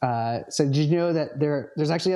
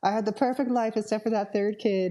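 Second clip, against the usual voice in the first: clumsy, bad, higher put-on fake woman's voice; 8 semitones higher than usual. Speaker imitates how a woman would talk on her deathbed; bad impression of her. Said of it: "This is not her voice. This is a bad impression".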